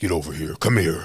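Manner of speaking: loud, devilish, menacing villain voice. Speaker demonstrates how he voiced his villain character, in a Mortal Kombat devilish villain voice. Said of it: "a little more devilish".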